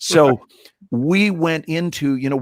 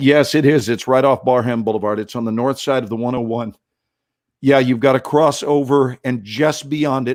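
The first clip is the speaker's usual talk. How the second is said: usual speaking voice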